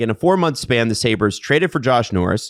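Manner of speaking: plain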